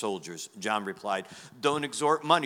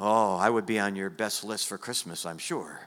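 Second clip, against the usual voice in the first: plain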